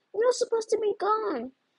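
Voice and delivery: very high-pitched, horrified cry. The PT confronts Sabrina, who was supposed to be gone, crying out in horror. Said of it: "The PT cried in horror".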